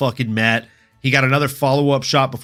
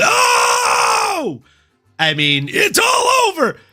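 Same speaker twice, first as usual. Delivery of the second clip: very drawn-out commentator call, swooping up and down; 3 semitones higher than usual. Retelling the room's reaction to a knockout: Joe Rogan impression yelling. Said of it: "did our very best Joe Rogan impression and yelled".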